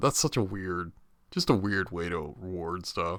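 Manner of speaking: ordinary talk, nothing marked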